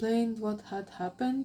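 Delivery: ordinary delivery, nothing marked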